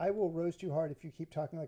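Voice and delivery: ordinary talk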